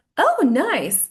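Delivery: genuinely thrilled and enthusiastic. A speaker demonstrating how tone of voice changes meaning, sounding excited. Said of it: "I'm really excited about this".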